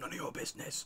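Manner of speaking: breathy, hissed whisper. Voicing a kid who refuses to answer: hissing the reply. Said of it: "so he, like, hisses at me?".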